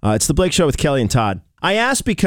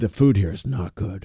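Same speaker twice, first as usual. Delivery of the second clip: mock theatrical voice, dramatic and disgusted; 5 semitones lower, 4 dB quieter than usual. Retelling a kid's video review of camp food: imitating dramatic disgust. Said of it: "It's just so dramatic".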